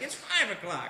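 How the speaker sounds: ordinary delivery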